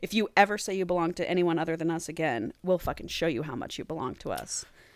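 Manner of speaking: grave, dead-serious, threatening tone. Retelling a story, quoting a character's threat: imitating a serious threat. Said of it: "he gets all serious".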